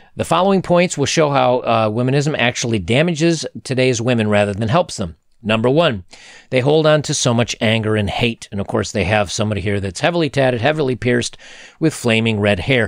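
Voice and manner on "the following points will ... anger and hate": ordinary delivery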